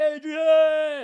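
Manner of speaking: horrible shrill, very high, very loud, drawn-out yell. Telling another speaker about the Rocky movies: horrible Rocky Balboa impression. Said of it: "That's a horrible impression".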